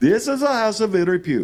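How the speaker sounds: put-on heavy Indian accent. Retelling a friend's words from a drive, doing Prakash's heavy Indian accent. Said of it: "in a very heavy Indian accent".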